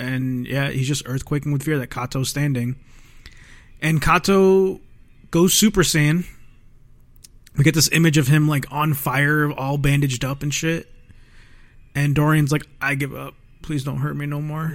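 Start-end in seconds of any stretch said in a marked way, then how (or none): 12.8-14.7 put-on crying, quieter. Retelling a fight scene, the speaker voices Dorian: imitating Dorian crying. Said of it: "is just crying".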